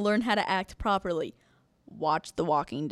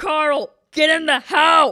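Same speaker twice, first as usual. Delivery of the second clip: very loud, high-pitched yelling; 8 semitones higher, 12 dB louder than usual. Retelling a scene where Rick yells at Carl: imitating Rick yelling. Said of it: "Rick was yelling at him".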